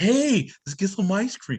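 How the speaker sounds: creepy man voice, pitched high and slow.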